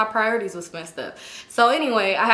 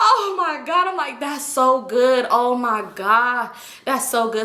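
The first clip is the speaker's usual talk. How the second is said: slow mock speech broken up by laughing; 2 semitones higher than usual. Retelling own reaction to news on the phone: imitating laughing while talking. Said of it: "I started laughing".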